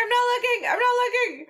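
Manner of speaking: put-on shrill, very high, terrified screaming. Retelling a movie scene of being swung around the city: imitating someone screaming.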